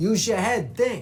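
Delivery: put-on New York accent, th turned to dental t. Speaker explaining how the th sound gets changed, demonstrating a New York Bronx accent. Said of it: "York accent".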